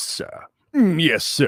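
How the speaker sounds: slow, drawn-out, high, dim-witted voice. Describing how the orcs talk in the game Arcanum: Arcanum orc voice. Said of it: "they talk like this".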